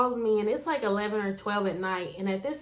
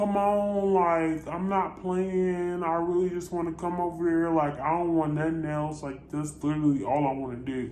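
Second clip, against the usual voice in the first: mock drunk slurred speech, lower pitch; 5 semitones lower than usual. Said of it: "he was just slurring".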